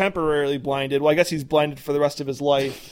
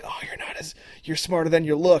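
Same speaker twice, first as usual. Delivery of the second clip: imitated whisper. Retelling a character's line in a show scene, imitating a whisper. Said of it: "when she whispers".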